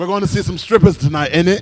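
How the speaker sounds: put-on English accent. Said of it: "you got an English accent?".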